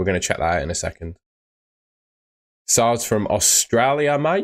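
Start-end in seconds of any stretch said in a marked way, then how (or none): 2.7-4.4 dubious fake Australian accent, slow. Host reading out where a viewer is from, put-on Australian accent. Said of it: "I don't know if that was a good Australian accent".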